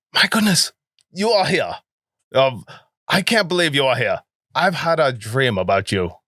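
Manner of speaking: put-on British accent. In a role-play scene, a character greets the new arrivals, British accent. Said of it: "I'm British".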